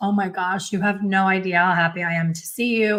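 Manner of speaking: acted-out very fast talking. Telling a story about reaching an airport hotel desk late at night, retelling rapid talking. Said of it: "I'm talking really fast like I do now".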